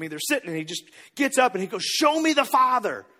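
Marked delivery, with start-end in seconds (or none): 1.8-3.0 mock frustrated, loud, drawn-out shout. Retelling how a disciple yelled at Jesus: imitating someone yelling. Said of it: "he kinda just yells at Jesus".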